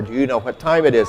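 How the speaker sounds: ordinary delivery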